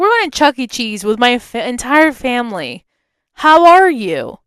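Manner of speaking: nasty, snotty, snide, sneering tone. Speaker retells their own reply to a flirting guy, in a nasty tone. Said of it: "talking in such a nasty tone".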